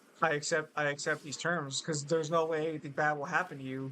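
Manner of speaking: ordinary talk, nothing marked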